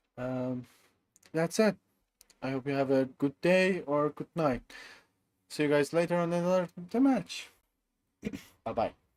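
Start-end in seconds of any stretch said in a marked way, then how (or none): 2.5-9.0 voice giving way, cracking and breaking as it goes. Streamer signing off to viewers after the tournament, voice breaking. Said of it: "my voice is breaking".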